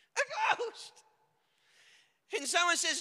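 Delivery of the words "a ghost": mock very high, mild startled yelp of fright. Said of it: "one of them screams".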